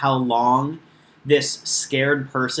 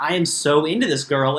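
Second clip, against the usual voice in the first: put-on voice with laughter running through. Retelling how Derek talked about his feelings, imitating Derek laughing while talking. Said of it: "he's kinda laughing about it".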